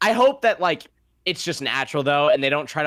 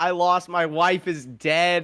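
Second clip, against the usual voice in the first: play-acted blubbering, high tearful voice on verge of tears; 5 semitones higher than usual. Mocking a character who is about to cry again: imitating Frank crying. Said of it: "he's gonna cry 'cause he's gonna be like".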